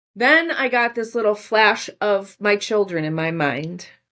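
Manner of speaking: ordinary talk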